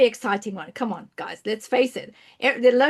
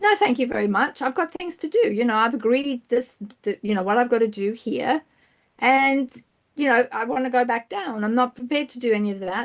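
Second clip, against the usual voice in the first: plain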